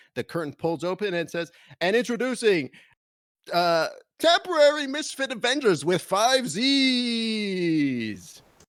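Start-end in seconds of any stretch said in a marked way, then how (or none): 1.9-8.5 very slow, loud, booming announcer voice, z's stretched. Imagining the group being introduced as the curtain opens, in an announcer voice. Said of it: "you hear an announcer voice".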